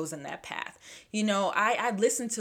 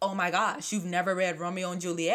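ordinary delivery

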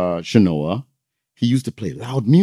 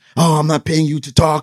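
put-on screaming, higher pitch; 7 semitones higher, 3 dB louder than usual. Retelling how Rockwell screamed at a worker in the store: imitating Rockwell screaming. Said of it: "He was screaming".

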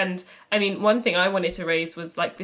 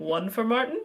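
terrible, bad put-on American accent; 4 semitones higher than usual. Retelling a class vote count in a terrible put-on american accent. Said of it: "terrible American accent there".

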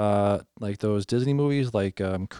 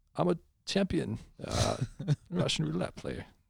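high, creaky put-on voice, slightly raised and crackling; 6 semitones higher, 7 dB quieter than usual. Doing a quick impression of Christopher Walken's line: Christopher Walken voice. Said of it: "Let me say that in his voice".

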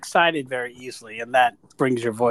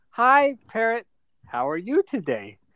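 high, slow, drawn-out, swooping pet-talk sing-song; 8 semitones higher than usual. Teasing a quiet friend, acting out how he talks to his parrot: imitating Dennis talking to his parrot. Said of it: "He's like".

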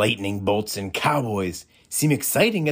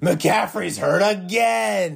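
high, furious, frustrated shout, long last word; 8 semitones higher than usual. A father looks up to the sky and shouts: angry shout. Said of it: "looked up to the sky to shout".

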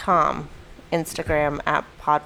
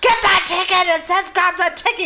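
very high-pitched, shrill yell; 12 semitones higher than usual. Quoting a man at a ticket slot who shouted at the speaker, retelling a yell. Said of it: "He's yelling at me".

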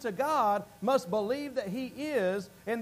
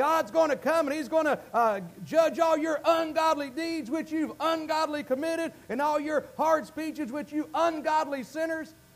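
Southern preacher voice, holding forth, pitched high; 5 semitones higher than usual. A speaker imagines Jude getting up to preach, as a Southern preacher. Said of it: "imagine this southern preacher by the name of Jude getting up there and saying".

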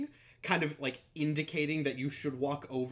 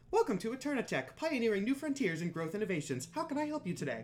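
upbeat, chipper corporate voice, pitched up; 6 semitones higher than usual. Voicing the smiling woman on the screen as she greets you, Eternatech Greeter AI voice. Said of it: "upbeat, kind of chipper, corporate AI-style voice".

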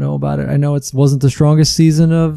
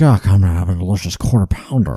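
deep, lowered, salesy advertisement voiceover voice; 6 semitones lower than usual. Imitating an ad voiceover heard on the radio: Brian Cox impression. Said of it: "That's a pretty good imitation there".

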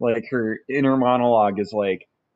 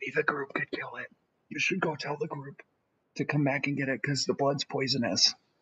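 barely audible, hushed whisper, very quiet; 10 dB quieter than usual. Game narrator voices a character warning about an orc: whispering. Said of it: "She whispers".

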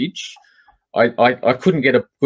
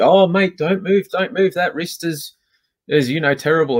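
put-on sarcastic tone, higher pitch; 6 semitones higher than usual. Retelling how an officer treated them, mocking a sarcastic officer. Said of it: "Just being sarcastic".

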